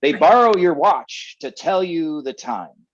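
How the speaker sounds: loud, blustery boss voice. Quoting what his boss once said, imitating the boss's voice. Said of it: "I'm trying to do his voice".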